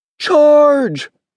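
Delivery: shrill, very high-pitched rallying battle-cry yell. A caterpillar calls out as the caterpillars chase a moth, yelled. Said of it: "yelled a caterpillar".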